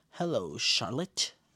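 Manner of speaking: chilling, frosty, icy cold delivery. Retelling a show character's line: coldest line delivery. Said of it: "drops the coldest line of the whole series".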